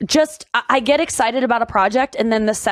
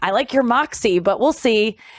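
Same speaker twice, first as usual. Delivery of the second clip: ordinary talk, nothing marked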